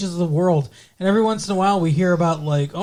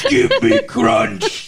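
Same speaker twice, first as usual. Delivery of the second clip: talking like a caveman; 4 semitones higher, 4 dB louder than usual. Acting out asking for candy at seven eleven: caveman voice. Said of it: "You sound like a fucking caveman".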